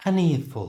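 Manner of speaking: "an earful" said with pitch falling away. Splitting an idiom into two parts to say it naturally: falling pitch on an earful. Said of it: "the second part is said with a falling pitch".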